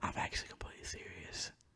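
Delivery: quiet whisper. Insisting to the other speaker that this is meant seriously, whispering. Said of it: "I'm still whispering".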